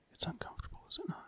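creepy, breathy whisper close to the mic. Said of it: "the Joe Biden creepy in the mic whisper".

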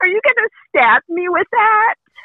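very high, very loud, shrill scream. Speaker retells what the daughter screamed on turning around, imitating a scream. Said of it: "and she screamed".

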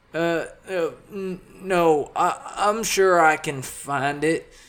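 spluttering the words. Offered a guide to his room by the woman, Gene declines, spluttering. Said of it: "Gene spluttered out".

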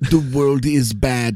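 slow, deliberate, each word weighed. Describing a filmmaker's documentaries, then imitating him: Werner Herzog impression. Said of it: "I did a pretty good impression just now".

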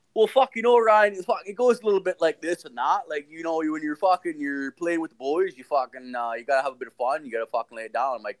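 talking like a country farmer. Retelling what dad said, imitating dad's farmer way of talking. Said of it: "And he's like".

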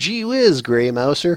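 friendly, folksy, next-door-neighbor voice. Showing how a version of a character sounded, in Fafhrd's next-door-neighbor voice. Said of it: "sounds like you would knock on his door to borrow a lawnmower".

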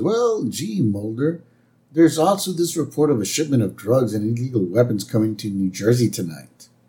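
ordinary talk

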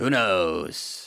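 low, put-on, shrugging weatherman voice. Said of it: "and be like".

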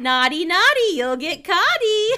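shrill, very loud, high cackling. Reading Harry Potter aloud, showing a co-reader how Peeves should sound: cackling Peeves voice. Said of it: "not doing it quite justice".

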